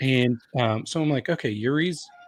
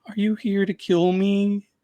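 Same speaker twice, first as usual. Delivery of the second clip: small, sweet high-pitched voice; 7 semitones higher than usual. Retelling how Yuri, sad backstage, turns around and sees Drax standing there, in the cutest little Yuri voice. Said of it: "with the cutest little voice says".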